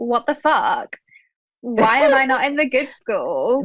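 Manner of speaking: mock affronted, outraged, indignant disbelief. Retelling a character's reaction to her school: imitating Sophie, outraged. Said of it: "Good impression".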